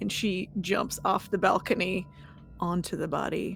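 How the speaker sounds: ordinary delivery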